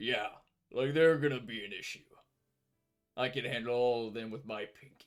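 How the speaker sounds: low put-on voice. In the game, voicing the lower-pitched guy among the target's companions: lower-pitched character voice. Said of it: "And the the lower pitch guy's gonna be like, / And the the lower pitch guy's gonna be like, / Working as a C P unit is fucking stressful. / And the the lower pitch guy's gonna be like".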